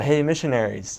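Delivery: mildly called-out voice. Retelling how a stranger called out from the alley entrance: imitating someone yelling. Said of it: "come to the mouth of the alley ... and yell".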